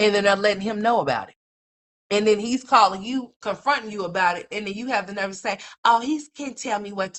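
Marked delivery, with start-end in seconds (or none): 5.9-7.2 put-on childish mocking little-girl voice, higher. Mocking what a parent says when confronted: mocking, like a little girl. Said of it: "you sound like a little ass girl".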